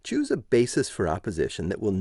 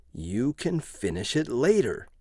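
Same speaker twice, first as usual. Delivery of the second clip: hissing dangerously, menacing; 3 semitones higher than usual. A man pulls Gloria away from her needles, dangerous hiss. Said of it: "he hissed dangerously".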